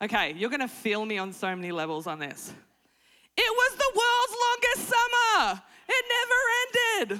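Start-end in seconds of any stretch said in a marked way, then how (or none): 3.4-7.2 lively, energetic tone. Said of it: "There's a little bit of energy in my voice".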